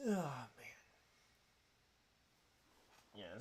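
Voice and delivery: soft words spoken through a yawn. Race commentator on little sleep, apologizing for yawning: yawning. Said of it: "sorry if I'm yawning a bit more".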